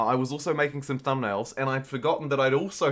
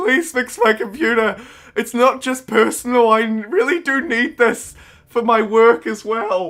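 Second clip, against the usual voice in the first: put-on near-tears pleading, very high and loud; 9 semitones higher, 8 dB louder than usual. Retelling taking a broken computer into a shop: imitating own tearful plea. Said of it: "almost crying, like, cupping my baby in my arms in tears".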